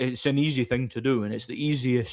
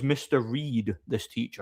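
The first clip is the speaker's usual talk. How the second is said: ordinary talk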